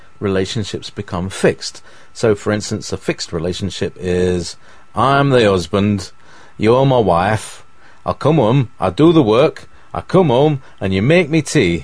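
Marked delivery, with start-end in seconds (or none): 5.0-11.9 loud, exaggerated, ridiculous northern English accent. A speaker gives an example of a traditional husband, in a ridiculous northern accent. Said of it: "I'm using a ridiculous northern accent here".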